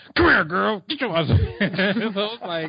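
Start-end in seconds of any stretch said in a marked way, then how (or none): 0.2-1.3 very high, pushy, aggressive street holler. Retelling how a man called after a friend on the street: imitating a more aggressive catcaller. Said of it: "you got a little more aggressive".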